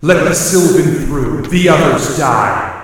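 very loud, booming, eerie voices speaking as one. Game master voices the glowing-eyed druids speaking to the players together: a chorus of voices. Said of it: "you hear a chorus of voices".

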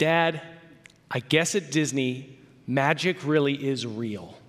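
amazed, awed voice full of wonder. Retelling daughter's words after a ride: imitating daughter's voice full of wonder. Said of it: "with this sense of wonder in her eyes and in her voice".

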